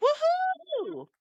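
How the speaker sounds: very high, loud whooping scream. Imitating how an actor always screams in movies: imitating Jason Momoa's scream. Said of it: "he always yells or screams".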